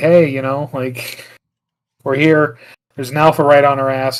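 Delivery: ordinary talk, nothing marked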